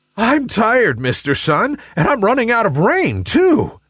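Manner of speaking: exhausted gasping, very high-pitched voice. Narrator reading a story, a rain cloud speaking to the sun after raining on it: gasping. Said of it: "gasped Nimbus".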